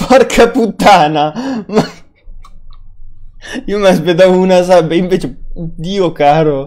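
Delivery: loud, slow, excited, disbelieving outburst.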